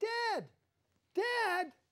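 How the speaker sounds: high-pitched, desperate mock cry. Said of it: "screaming for his dad".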